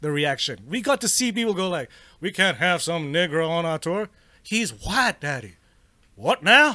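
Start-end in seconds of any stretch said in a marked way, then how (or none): 2.2-6.8 put-on animated cartoon character voice. Acting out people's reaction to a performer; King of the Hill voice. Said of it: "Why do I sound like the guy from King of the Hill?".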